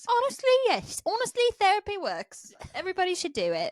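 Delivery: sudden put-on British accent, high and swooping. A couple praising therapy, one partner suddenly speaking in a British accent. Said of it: "why you're suddenly talking in a British accent".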